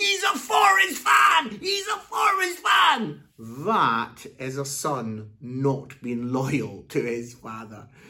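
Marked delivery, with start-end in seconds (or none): 0.0-3.2 very high, loud, football-terrace-style shout. Retelling a son taunting at the match: imitating son shouting. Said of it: "started shouting and saying".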